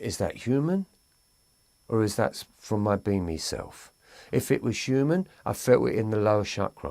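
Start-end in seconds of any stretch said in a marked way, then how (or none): none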